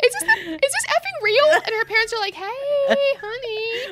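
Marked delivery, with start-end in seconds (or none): 0.0-1.5 put-on sobbing in disbelief, much higher, louder. Retelling how she reacted while her parents recorded, imitating someone sobbing.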